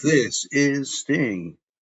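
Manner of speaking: grand, booming ring-announcer style delivery. Speaker presents the catchphrase they say they created, in a booming announcer voice. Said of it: "I have a booming announce voice".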